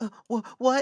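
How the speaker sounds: high, put-on stutter, tripping on words. Mocking how someone might talk, put-on stuttering voice. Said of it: "stuttering, like".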